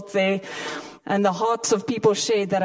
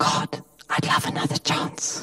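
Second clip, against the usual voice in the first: quiet, soft, much lower pitch; 5 semitones lower than usual. Speaker repeats what they once said to god, quietly said. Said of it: "oh so quietly said".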